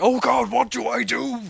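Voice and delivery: very high, rough, raspy monster voice. Describing a Star Wars dance-command trick, the speaker voices the boss: Rancor voice. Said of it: "Said the Rancor".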